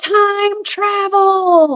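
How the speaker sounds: play-acted very high woman's call, drawn out. Walking by a creek at night, the speaker recalls a woman's voice, imitating a super loud shout. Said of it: "Super loud".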